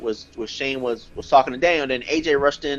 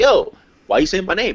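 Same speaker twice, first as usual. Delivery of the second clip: put-on angry voice, higher and louder; 6 semitones higher, 4 dB louder than usual. Retelling how Daniel Bryan came to the ring: imitating angry Daniel Bryan. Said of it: "He was pissed".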